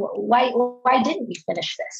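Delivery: sincere, curious, genuinely asking, no accusing edge. Demonstrating a non-sarcastic way to ask a question, genuinely curious question. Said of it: "So you can hear the tone of my voice. It's genuine".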